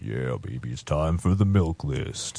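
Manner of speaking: super low, very deep, seductive, sensual voice. Introducing the milk list segment, a host speaks in a super deep, sensual voice. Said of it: "super deep, sensual voice".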